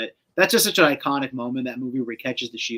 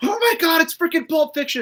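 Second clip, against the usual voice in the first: thrilled, high, excited scream; 4 dB louder than usual. Recalling a moment in a movie theater, retelling own scream. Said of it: "I'm screaming like".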